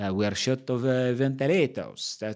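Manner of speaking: attempted put-on Italian accent. Explaining ventilation, the speaker repeats a line from the news in an attempted Italian accent. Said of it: "That's supposed to be an Italian accent".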